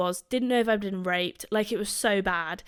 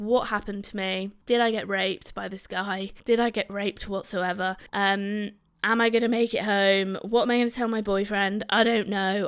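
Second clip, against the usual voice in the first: ordinary talk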